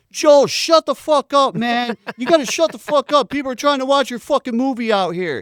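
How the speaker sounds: very high, very loud, shrill screaming yell. Retelling an audience member's outburst at the director: imitating Bobcat yelling. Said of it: "you hear Bobcats yells".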